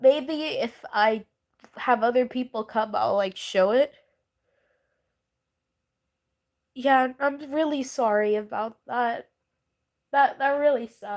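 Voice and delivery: talking through tears while weeping. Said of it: "I don't think you guys need to see me crying right now".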